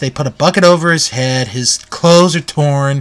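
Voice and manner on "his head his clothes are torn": normal talking voice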